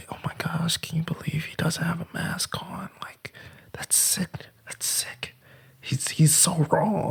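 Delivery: very hushed, disapproving, tut-tutting whisper. Retelling two older ladies in a bank talking about him, imitating their whisper. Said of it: "sitting in there like and whispering".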